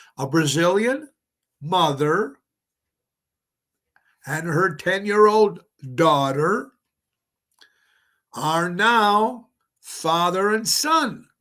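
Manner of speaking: slow, deliberate, drawn out. The speaker repeats a statement for listeners who missed it, slower and deliberate. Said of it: "I'm going to say it again a little slower".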